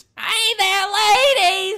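very high-pitched, very loud, shrill, obnoxious squawk. Speaker compares a game character to a cartoon parrot: parrot from Aladdin voice. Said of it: "really obnoxious, ... That voice".

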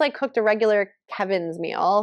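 ordinary delivery

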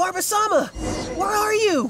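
very high, searching, calling yell. A game character searching for barbasama calls out, yelling. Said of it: "we could start yelling too".

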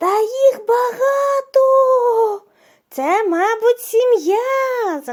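very high, very slow shout, сім'я drawn out. Narrator reads a young boy's line to his father; shouted. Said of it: "закричав хлопчик".

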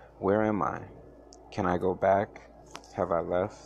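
ordinary delivery, nothing marked

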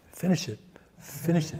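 barely audible, soft, hushed whisper. Quoting a repeated message from the movie: imitating a soft whisper. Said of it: "It's like a whisper".

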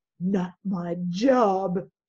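sour, unhappy grumbling with drawn-out words. Narrator reading a woman's line while she cleans the table, grumbling. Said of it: "she grumbled".

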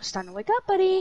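high, automated phone alarm voice. Speaker shows the others they can sound like a phone alarm voice. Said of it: "I can sound like your phone alarm".

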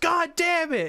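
very high-pitched, furious, angry yell. Retelling how a man yelled as he walked off, imitating his yell. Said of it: "he walks off and he yells".

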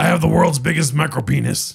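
rough, raspy, creaky put-on voice. Answering a request for an impersonation: Alex Jones impersonation. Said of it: "can you do an Alex Jones impersonation?".

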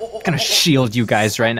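mock menacing, threatening delivery. Imitating a teammate's line about shielding the group: imitating a threatening tone. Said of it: "in, like, a threatening manner".

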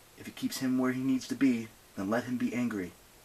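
ordinary delivery

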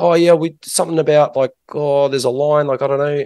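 put-on casual young man's New Zealand accent. Retelling what some lads said, the speaker does a Kiwi accent. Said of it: "I'll do my Kiwi accent".

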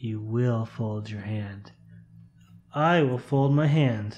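softly spoken. Acting out a Jedi mind trick at a poker table, speak quietly.

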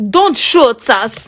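bad, failed attempt at an Irish lilt. Retelling what he thought someone said, bad irish accent. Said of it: "I thought he said in an Irish accent".

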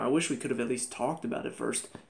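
ordinary delivery

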